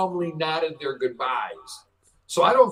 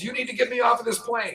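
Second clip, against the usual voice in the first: put-on yell, higher pitch; 7 semitones higher than usual. Retelling how a passenger on a plane yelled: imitating a passenger yelling. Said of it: "So she's yelling".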